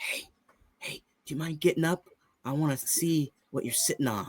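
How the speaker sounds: very quiet, hushed, barely audible whispered aside. Retelling how JD Vance kept whispering to the Pope: imitating JD Vance whispering. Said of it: "He kept whispering to the Pope".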